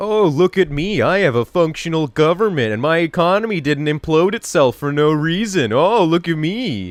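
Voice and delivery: mock smug voice with a European accent. Mocking viewers from the EU after a day of EU talk: mocking impression of Europeans. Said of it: "that's my impression of those of you in the E U".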